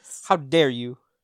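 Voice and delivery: put-on upset outburst. Retelling own reaction to family going to McDonald's: imitating own upset outburst. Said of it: "I was just so upset".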